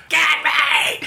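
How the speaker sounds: fake shout.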